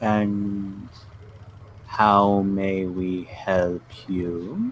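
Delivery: deep feminine voice, drawn-out "and". Answering the group after their greeting is returned, speak in a deep feminine voice. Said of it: "you hear this deep feminine voice".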